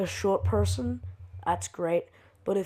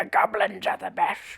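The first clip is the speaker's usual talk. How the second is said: put-on goblin voice; 3 dB quieter than usual. Asked to say a line, which comes out not as Toad: goblin voice. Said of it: "That was just a goblin".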